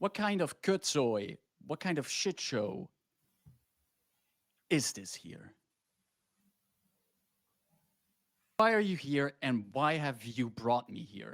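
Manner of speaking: outraged, exasperated, demanding tone. Speaker voicing the prince in the basement, booming voice. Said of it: "You hear his voice booming".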